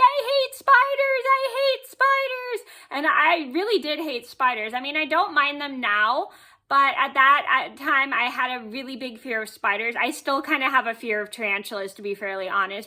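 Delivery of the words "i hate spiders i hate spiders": very high, slow, drawn-out, frightened scream-cry. Recounting a past fright over a spider, retelling screaming and crying. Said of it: "And I'm screaming, crying".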